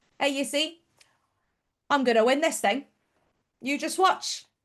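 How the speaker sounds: put-on Cockney accent. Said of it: "Would you like to do that again?".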